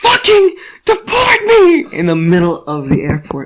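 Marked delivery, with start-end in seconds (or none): 0.0-1.9 frantic, very high, loud screaming. Retelling being told at the airport he'd be deported, retelling own screaming. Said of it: "I'm just screaming".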